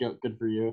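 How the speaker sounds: normal talking voice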